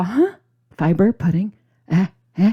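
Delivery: acted-out doubtful, skeptical huh. Acting out viewers' reaction to a fiber pudding: imitating doubtful viewers. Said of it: "I know you're all".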